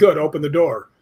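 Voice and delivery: ordinary delivery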